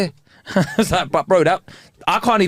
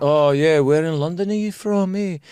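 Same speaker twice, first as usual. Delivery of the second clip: imitated Scottish accent. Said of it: "an Albanian Scottish accent".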